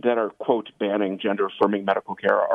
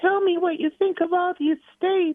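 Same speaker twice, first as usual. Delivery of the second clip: put-on little girl voice, higher. Quoting a TikTok star's question to the president: Dylan Mulvaney voice. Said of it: "I should do Dylan Mulvaney voice 'cause he does a little girl voice".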